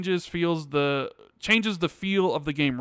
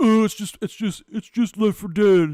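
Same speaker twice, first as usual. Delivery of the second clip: loud, condescending, dismissive, mocking put-on voice; 4 semitones higher, 6 dB louder than usual. Imitating how people talk down about left 4 dead, in a talking-down mocking voice. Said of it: "In that voice?".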